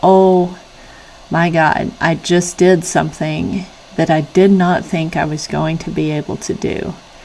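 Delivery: ordinary delivery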